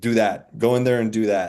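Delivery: ordinary talk, nothing marked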